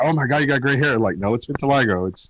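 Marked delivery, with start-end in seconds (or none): none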